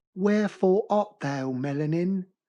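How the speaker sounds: slow, put-on British English accent. Quoting a line, then asking if others liked the accent: put-on British accent. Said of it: "I spoke right there with an accent".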